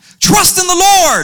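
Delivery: mock yelling. Retelling how a big guy came up behind and yelled in his ear: imitating someone yelling. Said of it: "he starts to yell in my ear".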